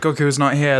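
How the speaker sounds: normal talking voice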